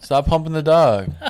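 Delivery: put-on yelling. Retelling yelling at a dog to stop all night: retelling yelling at a dog. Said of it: "That's all we were yelling all night".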